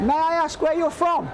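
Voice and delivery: high-pitched shouting. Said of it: "Why is he yelling so much?".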